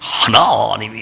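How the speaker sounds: put-on slow, drawn-out, young preacher's sermon voice.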